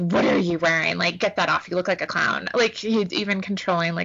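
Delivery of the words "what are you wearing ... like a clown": ordinary talk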